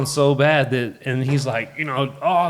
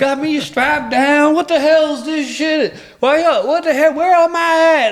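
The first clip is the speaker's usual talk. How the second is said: acted, raving, bewildered, very high, loud hollering; 13 semitones higher, 5 dB louder than usual. Retelling a man strapped to a gurney in a hallway: imitating someone yelling. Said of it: "he's just yelling".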